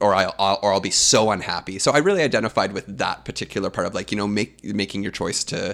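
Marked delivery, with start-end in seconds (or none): none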